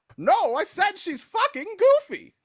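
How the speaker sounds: very high, loud, swooping helium cartoon squeak. Asked how Mickey sounds, a group member answers in a Mickey Mouse voice. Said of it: "like you inhaled helium".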